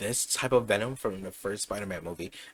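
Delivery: ordinary delivery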